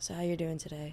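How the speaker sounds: flat, even monotone on one note. Trying out the guest's flat way of speaking: flat one-level voice. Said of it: "your voice is, like, very, like, just one level".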